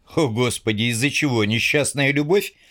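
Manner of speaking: ordinary talk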